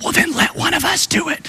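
very high, hushed, whispered murmur. Retelling a story, acting out the men's reply to their leader: imitating a whisper. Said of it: "they whispered".

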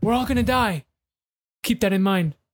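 weighty, declarative delivery like a big revelation. Retelling how Gary Vaynerchuk says stupid things like truth bombs: imitating Gary Vaynerchuk dropping truth bombs. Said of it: "as if he was dropping, like, big truth bombs".

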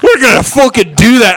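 jokey put-on Scottish accent, loud and high. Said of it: "This Scottish slash Filipino guy".

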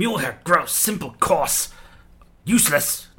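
growly creature voice, bugbear-like. After spitting on the ground, the bugbear speaks, in a bugbear voice. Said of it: "The bugbear sort of spits onto the ground and goes".

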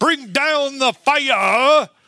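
loud, very high fervent preacher voice, fire stretched out. Recalling how a Holy Ghost pastor prayed; imitating a loud preacher. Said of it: "he would say it so loudly that he'd get that inflection".

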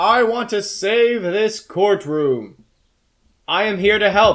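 big, resounding, loud, high booming voice. Telling a story where a cat on the judge's bench addresses the courtroom; booming voice. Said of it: "says in a booming voice".

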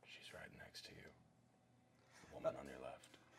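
whispered, hushed mutter with frustration held in. Telling another player where the woman is, in character: under breath, hiding frustration. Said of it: "Under my breath, hiding my utter frustration".

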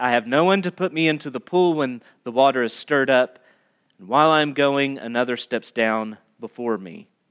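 flat, level, uninflected monotone reading. Reading a man's answer to Jesus aloud, in a flat monotone. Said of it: "just read it flat".

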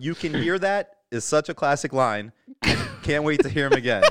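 plain

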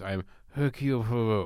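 mumbled, indistinct words. Imitating a character mumbling his own name when introduced: Hercule Poirot mumbling his name. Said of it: "I like when a character mumbles their own name when they're introduced".

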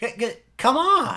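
voice lifting upward on the final "on". Imitating how he ends every sentence: imitating an uptick at sentence end. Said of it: "kind of an uptick in his voice".

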